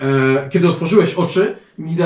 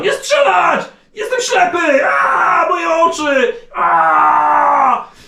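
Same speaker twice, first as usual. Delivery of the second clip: very high shrieking yell, long drawn-out aaa; 12 semitones higher than usual. Voicing a blinded enemy during a fight scene: shouting. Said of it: "Ktoś krzyknął".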